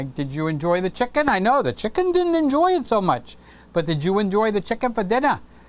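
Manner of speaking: New York accented speech.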